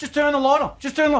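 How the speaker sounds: high, frightened, scared pleading voice. Retelling sitting alone on the couch during a horror movie: retelling scared pleading at the screen. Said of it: "It's the scariest thing I've ever done".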